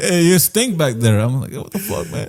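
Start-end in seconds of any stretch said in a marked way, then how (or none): 0.0-1.2 put-on Middle Eastern-accented speech. Retelling what an Uber driver said to him, in a Middle Eastern accent. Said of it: "what kind of accent was that? / Middle Eastern".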